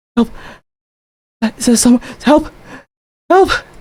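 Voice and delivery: very high, whimpering cries and calls. Voicing an elven lady calling out from a dark room: whimpering cry for help. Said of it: "hearing her whimper like this".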